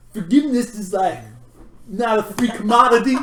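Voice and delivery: puppet-like character voice. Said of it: "It's Jan from the Muppets, man".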